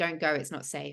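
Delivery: plain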